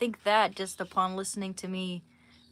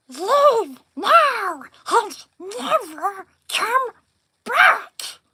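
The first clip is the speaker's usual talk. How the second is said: loud, shrill, high creature voice, belted out; 13 dB louder than usual. Asked to do Smeagol after watching Lord of the Rings, doing a Smeagol voice. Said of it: "I'll do Smeagol".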